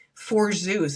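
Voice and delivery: ordinary talk, nothing marked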